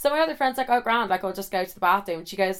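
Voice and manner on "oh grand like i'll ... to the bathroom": ordinary delivery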